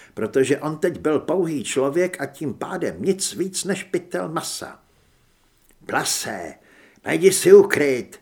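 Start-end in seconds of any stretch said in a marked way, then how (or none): 5.9-8.1 very loud shout. During a gunfight, he speaks to her, shouting into her ear. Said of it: "křikl jí do ucha".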